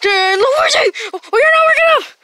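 high, loud, panicked cry.

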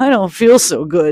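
moaned words. Narrator reading a story, a character just dropped by the dogs: moaning. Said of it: "Sock moaned".

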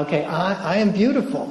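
halting, heartfelt, still slightly unsure delivery. Retelling how Deborah said the line again: imitating a smiling reply. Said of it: "And then she gets this smile".

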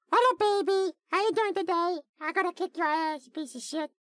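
put-on squeaky puppet voice. Showing how they normally do the voice, in an Elmo voice. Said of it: "normally if I'm gonna do Elmo's voice".

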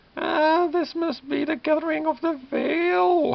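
shrill, very loud, very high cackle, drawn-out "veil". Narrator reading the necromancer's line as she walks toward the church, cackling as Biala. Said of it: "Biala cackles".

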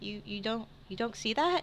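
half-whispered, halting, stammering, hushed delivery. Voicing a distracted character nudging a companion: half-whispering. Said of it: "he nudges you and he whispers".

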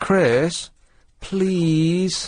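whiny, whingeing voice. Told to ask nicely for another cup, the speaker tries it whiny. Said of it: "That was whiny".

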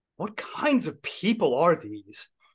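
put-on full-throated, swooping, loud stage yell. Recounting what he yelled about the people in the audience, retelling a yell. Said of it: "and then he yelled".

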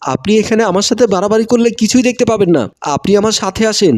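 ordinary delivery

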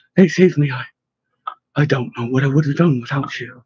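plain reading voice

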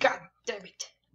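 put-on demonic voice, going fully demonic. Cursing at a laggy recording for viewers, slipping into a demon voice. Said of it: "Went into a demon voice there with that".

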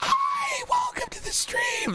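attempted high-pitched voice. A streamer shows what comes out when trying an attempted high-pitched voice. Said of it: "me when I try to do a high pitched voice".

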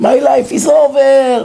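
shrill, frantic, raging shout with over-stretched words. Recounting a boy's phone call after police caught him, imitating his shouting. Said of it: "צועק, משתולל".

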